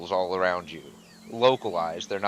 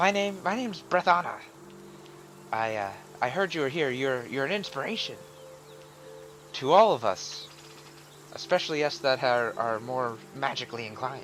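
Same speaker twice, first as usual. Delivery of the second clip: small creature character voice, higher and quieter; 4 semitones higher, 6 dB quieter than usual. Voicing a small creature who tackle-hugs a player: voicing a small creature. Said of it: "she steps back and".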